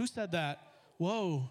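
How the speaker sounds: ordinary delivery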